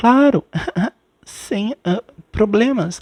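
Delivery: very innocent, guileless, high little voice. Retelling how a reality show contestant accepted a date: imitating an innocent voice. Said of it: "com aquela voz assim, sabe, bem inocente".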